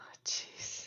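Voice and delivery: soft, shocked, stunned whisper under the breath.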